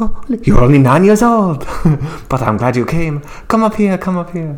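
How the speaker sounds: put-on clumsy French accent. Act out a woman greeting nine-year-old little Guido, in a bad French accent. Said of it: "she didn't do the French accent too good".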